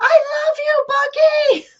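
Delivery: acted screaming. A mother retells a theater moment during the movie, retelling screaming out. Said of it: "I'm like screaming out".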